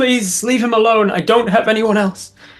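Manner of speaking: desperate, high, pleading scream. Narrating the player's sister calling out across the crowd to him: screaming plea. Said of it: "and she screams".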